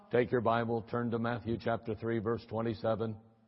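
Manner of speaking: mock deep, droning, very low one-note monotone. Imitating boring older guys at bible college, in a flat monotone. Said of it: "they were monotone".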